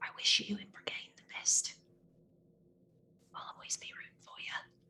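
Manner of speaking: soft, hushed, breathy leaned-in whisper. Leaning in to a fellow party member at parting: whispering in character. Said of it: "I lean in and I whisper".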